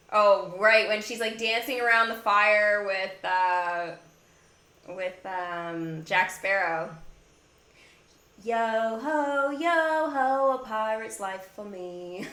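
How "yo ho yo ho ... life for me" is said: slow, eased-into put-on British accent. Quoting Elizabeth Swann from the scene dancing around the fire, in an Elizabeth Swann British accent. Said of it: "British accent".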